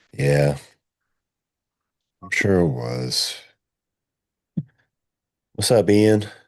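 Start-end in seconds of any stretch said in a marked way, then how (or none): 0.2-3.4 downcast, glum, dejected, depressed tone. Replying to someone who says gt is pretty good, sounding depressed. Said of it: "you just sounded so depressed right there".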